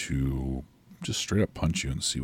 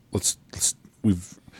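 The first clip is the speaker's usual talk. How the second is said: put-on louder, higher Middle Eastern accent. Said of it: "a Middle Eastern accent".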